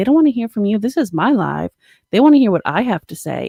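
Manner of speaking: play-acted furious, cringey angry tirade. Retelling how a man in a video went off on his girlfriend, imitating an angry outburst. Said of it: "he went the fuck off on her".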